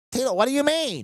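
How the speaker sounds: voice pushed way up. Imitating how Adam talked when he was Tila, high Adam voice. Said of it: "his voice went up".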